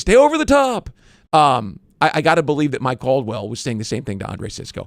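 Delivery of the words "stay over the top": very high, shrill yelling scream. Retelling screaming at a son playing football: imitating screaming at someone. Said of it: "I'm in the stands the other night screaming".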